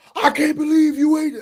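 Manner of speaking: high, loud disrespectful outburst. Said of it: "he still ain't going like".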